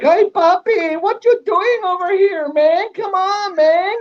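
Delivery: very high, slow, drawn-out Mexican accent. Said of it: "he's got his Mexican accent".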